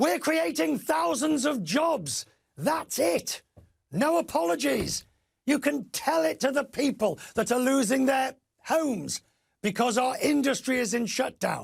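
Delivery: badly acted, high, furious, angry ranting tone. Impersonating a man heard on a tape: mock-angry impression. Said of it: "I'll give you some of the sort of the tone, ... Dreadful impersonation, ... He is very angry".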